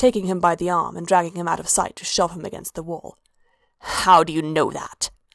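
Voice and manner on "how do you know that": level, flat, low voice, words spat out. Narrator reading a woman who has shoved a man against a wall, spat out, flat and low. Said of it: "She spat out, the words flat and low".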